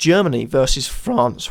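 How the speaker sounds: voice cracking. A speaker predicting tournament results names the second semi-final, voice cracking. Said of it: "nice voice crack there".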